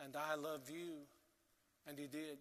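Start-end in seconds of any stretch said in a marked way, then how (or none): 0.0-0.9 put-on weak, fading voice, quieter. Retelling a dying friend's last words: imitating a fading voice. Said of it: "he said in a fading voice".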